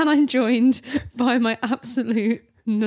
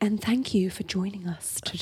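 soft, hushed ASMR voice; 4 semitones lower, 7 dB quieter than usual. Host mimics a co-host's welcome to the show, imitating Coop's ASMR voice. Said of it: "Are you trying to channel the ASMR now?".

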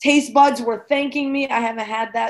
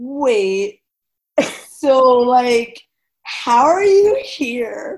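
put-on Californian accent, very slow, "wait" drawn out; 4 dB louder than usual. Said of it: "the Californian's accent".

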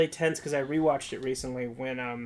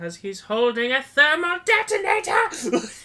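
very high, loud, swooping, terrified cry; 12 semitones higher, 5 dB louder than usual. Retelling a scene where C-3PO answers a question, mock-terrified C-3PO voice. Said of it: "in a terrified voice".

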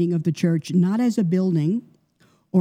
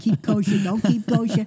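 put-on New York accent; 3 semitones higher than usual. Listing old disputes among disciples, joking: put-on new york accent. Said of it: "Your New York accent coming out there".

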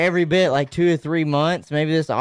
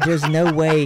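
normal talking voice

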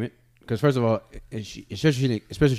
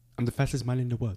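put-on Jamaican accent, much quieter; 6 dB quieter than usual. Told to do his best jamaican, trying a put-on jamaican accent. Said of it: "Do your best, Jamaican".

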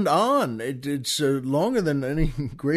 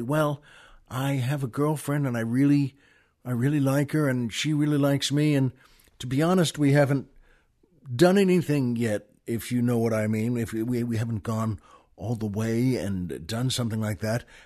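put-on quiet young man voice, lower pitch; 3 semitones lower than usual. Telling a joke, the young man asks the pharmacist: imitating a young man speaking quietly. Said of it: "he leans in and says, uh, kinda quietly".

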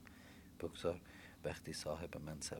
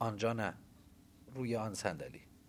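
loud, authoritative, commanding tone; 5 semitones higher, 8 dB louder than usual. Narrator reads the father's line to his family, commanding. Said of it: "پدرم آمرانه گفت".

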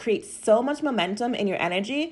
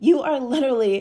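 passionate voice breaking and cracking on "literally"; 3 semitones higher, 3 dB louder than usual. Explaining an idea with passion, voice cracking. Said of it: "my voice just cracked there".

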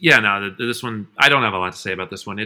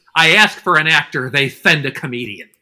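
high-pitched put-on cartoon duck voice; 5 semitones higher than usual. Retelling how the director tore apart the actor: imitating Daffy Duck. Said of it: "And Daffy's like".

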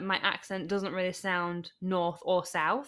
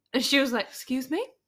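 usual speaking voice

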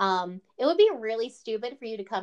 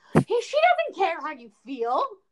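put-on screaming, higher and louder; 7 semitones higher, 6 dB louder than usual. Retelling yelling at the television during an interview: imitating screaming at the TV. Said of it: "screaming, screaming at the television".

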